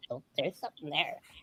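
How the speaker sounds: mock sarcastic muttering. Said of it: "I get very sarcastic to myself".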